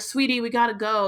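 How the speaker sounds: normal talking voice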